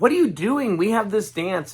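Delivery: very high, shrieking scream, acted out. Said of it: "she's screaming".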